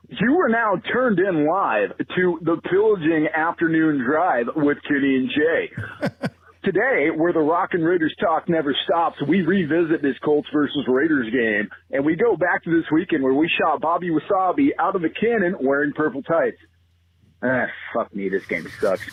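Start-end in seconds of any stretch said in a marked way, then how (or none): 0.2-16.6 drive-time radio DJ promo announcer voice. Recording a promo for a sports talk show: radio voice promo. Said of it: "a little radio voice promo".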